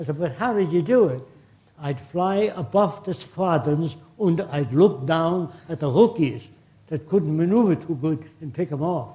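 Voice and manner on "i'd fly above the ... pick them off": put-on heavy German accent. Retelling an interview with a pilot who downed seventy planes, heavy German accent. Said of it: "He said in a heavy German accent".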